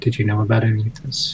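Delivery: whisper under breath. Turning to another character and asking quietly: whisper under breath. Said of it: "just sort of whisper under my breath".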